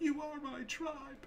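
high, soft voice, cracking and breaking. Retelling a woman's line from a movie, mimicking a voice cracking. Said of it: "with her voice cracking".

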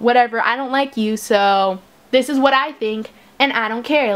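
plain

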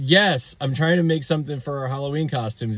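ordinary delivery

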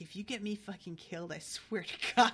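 put-on angry whisper. Recounting a scene where he whispers to her, retelling an angry whisper. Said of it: "he's whispering to her that".

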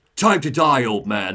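heavily processed robot voice through a speaker system. Describing a game scene, quoting a voice from the speaker system in a robot voice. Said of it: "a heavily augmented voice coming out of the speaker system".

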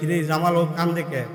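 ordinary delivery

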